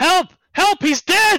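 very high, very loud, shrill top-of-the-lungs screaming. Game master voices a man screaming in his thoughts after a death, screaming for help. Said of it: "He is screaming at the top of his thoughts".

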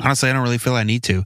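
talking really fast, rattled-off and agitated.

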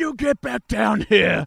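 aggressive, bossy tone, rough and slow. Recapping a scene, re-enacting a line, imitating James Reed's aggressive boyfriend. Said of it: "he turned into an aggressive boyfriend and went".

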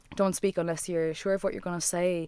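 ordinary talk, nothing marked

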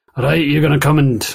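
put-on Scottish accent. Voicing a tabaxi character in a game: put-on Scottish accent. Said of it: "I got no Scottish".

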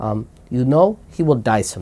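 put-on heavy, thick Eastern European accent. The speaker quotes their mother-in-law's opening line in a thick eastern european accent. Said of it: "in her thick Eastern European accent".

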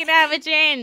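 fake nasal twangy voice. Retelling ordering drinks at a bar with friends, put-on nasal twangy voice. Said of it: "really nasal and like really twangy".

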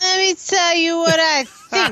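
put-on, very slow, high, drawn-out drunken delivery. Acting out what she seems to be thinking, in a mock drunk voice. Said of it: "in more of a drunk voice than I even have right now".

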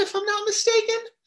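voice cracking, sudden squeaky jump to high pitch.

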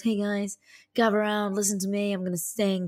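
mock arrogant, show-off voice. Imitating an arrogant chap who comes along with a guitar: imitating an arrogant guitar guy. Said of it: "this arrogant chap that comes along with a guitar and goes".

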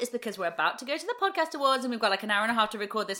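rattled off very fast. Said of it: "If I'm talking super fast".

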